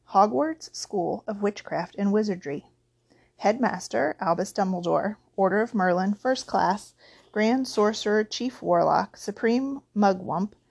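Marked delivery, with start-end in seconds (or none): none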